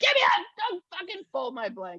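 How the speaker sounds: high, screamed voice, swooping and swinging wildly. Telling a listener how a woman she worked with screamed at her, retelling someone screaming. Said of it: "She starts screaming at me".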